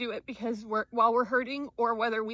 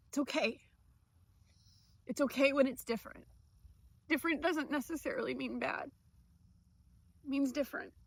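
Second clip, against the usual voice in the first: speaking through tears; 3 semitones higher, 6 dB quieter than usual. Encouraging people going through strokes, the speaker talks while crying. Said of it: "And I'm crying".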